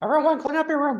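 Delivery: very high, unwell-sounding frog puppet voice. Greeting the podcast audience when introduced: Jordan Peterson impression. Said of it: "that's a Jordan Peterson impression".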